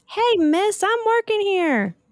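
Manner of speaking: little voice yelling, very high. Reading a story aloud, a tiny voice shouts at someone plucking flowers: tiny shouting voice. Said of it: "a tiny voice shouted".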